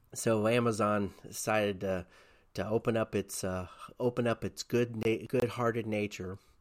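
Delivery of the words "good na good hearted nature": openly sarcastic delivery. Commenting on a company's decision to help distribute vaccines: sarcastic tone. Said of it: "can you hear my sarcasm?".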